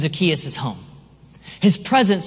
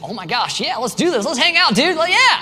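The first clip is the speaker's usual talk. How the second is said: play-acted very high, rising, thrilled, eager gush; 9 semitones higher than usual. Retelling an eager reply to a visit invitation: acting out excited speech. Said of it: "he was excited".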